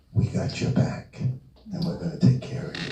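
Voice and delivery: close, high, soft, reassuring whisper. Recalling a woman cradling his head, leaning in to him: retelling a whisper. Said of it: "she whispers".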